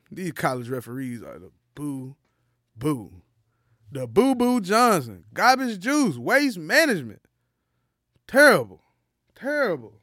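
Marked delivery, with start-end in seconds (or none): 8.3-9.8 loud, booming sports-pundit voice with swooping pitch. Complaining about college referees, in a Charles Barkley voice. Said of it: "I hope y'all heard that in Charles Barkley voice".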